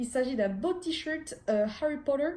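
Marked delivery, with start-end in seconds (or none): 1.8-2.3 spoken in an American accent. Presenting a t-shirt, the speaker says the name with an american accent. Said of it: "avec l'accent américain alors que c'est anglais".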